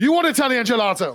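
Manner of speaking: mock, shouted, vendor-style hawking voice. Retelling a vendor's hard sell at a gelato counter: imitating a vendor shouting. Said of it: "Really shouting at us".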